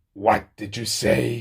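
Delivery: hissed delivery. The narrator reads the man's reply as he turns his head back to Cassie, hissed. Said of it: "he hissed".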